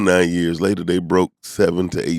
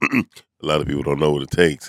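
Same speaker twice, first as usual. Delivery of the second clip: fake deep grown-man voice; 4 semitones lower, 3 dB quieter than usual. Responding to praise for commitment, repeat the line in a put-on manly voice. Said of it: "let me put on my man voice".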